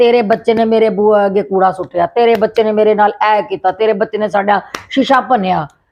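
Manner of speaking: plain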